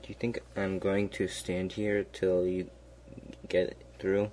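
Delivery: ordinary delivery, nothing marked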